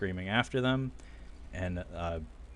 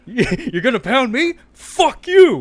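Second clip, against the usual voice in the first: yelling, higher and louder; 14 dB louder than usual. Retelling what the director yelled back at Elliot: imitating someone yelling. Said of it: "what the director yelled at him".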